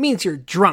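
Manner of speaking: slow, loud, smug know-it-all tone. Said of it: "like, all smug goes".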